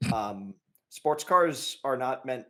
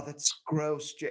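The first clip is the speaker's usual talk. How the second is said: mock sleepy murmuring, higher; 4 semitones higher than usual. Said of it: "pillow talking".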